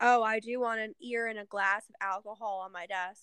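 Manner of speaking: usual speaking voice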